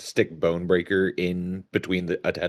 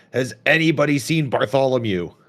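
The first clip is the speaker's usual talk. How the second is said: loud, high shout, calling out; 7 semitones higher, 6 dB louder than usual. Telling a scene, a character calls out to everyone, shouting out. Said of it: "Orlo just shouts out".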